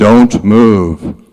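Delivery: huge, loud booming voice. Imagining an answer to a prayer about moving cities: booming voice of God. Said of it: "I hear this booming voice say".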